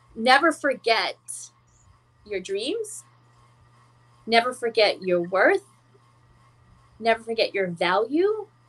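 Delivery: choking up, teary-eyed. Answering what to tell a younger self, getting teary-eyed. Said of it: "And I'm getting teary-eyed".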